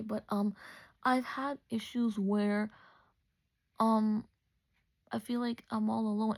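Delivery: slow, halting voice, fighting back laughter and tears. Telling listeners about trouble making friends since fourth grade, trying not to laugh and cry. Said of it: "I'm trying not to laugh and cry".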